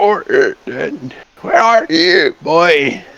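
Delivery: very slow, strained, throaty, throat-straining calling voice. Game master voices someone calling for orden from an alleyway, strained throaty voice. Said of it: "that's killer on my throat".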